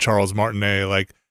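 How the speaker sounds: usual speaking voice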